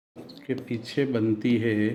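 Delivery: very slow, measured speech with long pauses.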